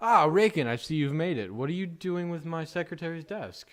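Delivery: big booming voice, very loud and high. Narrating a scene, voicing the mayor addressing raken, booming mayor voice. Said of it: "the mayor's booming voice say".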